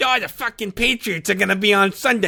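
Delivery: put-on Rhode Island accent. Retelling a waiting-room stranger's local talk: imitating a Rhode Island accent. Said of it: "that fucking nauseating accent".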